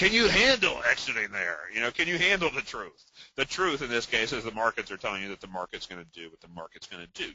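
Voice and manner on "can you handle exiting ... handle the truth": swooping, pitched-up movie delivery with wide high pitch swings. Making your best attempt at a figure from A Few Good Men, do a Jack Nicholson impression. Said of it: "at my best Jack Nicholson from uh".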